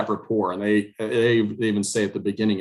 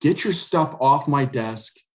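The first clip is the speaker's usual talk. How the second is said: imitated screaming, pitched up; 5 semitones higher than usual. Retelling a mock meeting where the guy started screaming: imitating someone screaming. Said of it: "he just starts screaming at me".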